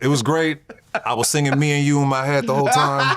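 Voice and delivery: high-pitched, laughing delivery.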